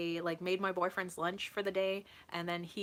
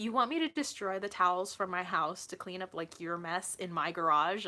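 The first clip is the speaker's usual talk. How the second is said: ordinary talk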